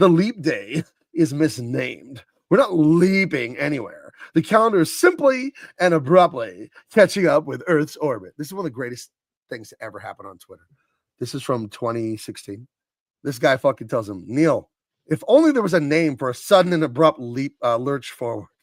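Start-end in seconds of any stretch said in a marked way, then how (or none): 0.0-8.3 dismissive, derisive, scoffing delivery full of scorn. Reading out a tweet, the speaker uses a mock-scoffing voice. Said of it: "I'll read this in scoffing voice".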